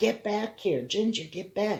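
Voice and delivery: put-on high yell, reined in and held back. Retelling a car scene, the speaker re-enacts calling after a woman: retelling own yelling. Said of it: "I'm yelling and screaming".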